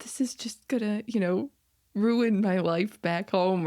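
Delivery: mock weepy, tearful, crying delivery. Retelling what a woman on the show said: imitating someone crying. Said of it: "And then her crying, like".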